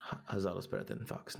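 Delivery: whispered mutter, under the breath. Speaking in character after casting a blessing: muttered under the breath. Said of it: "And under my breath, I say".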